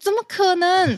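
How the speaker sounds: mock, shrill, very high incredulous cry. Retelling shouting at a wealth chart about Taiwan, retelling a shout of disbelief. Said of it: "我就直接对着图那边大喊说".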